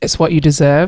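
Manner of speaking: ordinary talk, nothing marked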